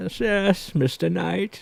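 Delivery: put-on hushed, old, creaky voice. Showing the others the voice used in the voicemail, do the Bane voice, like an eighty-year-old Englishman. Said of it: "You sound like like an Englishman who's about eighty years old".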